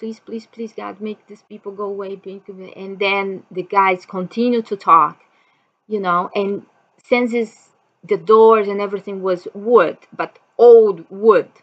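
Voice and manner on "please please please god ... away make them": barely audible, hushed, desperate pleading. Retelling own prayer while intruders talked outside: retelling a desperate prayer. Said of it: "I start just praying".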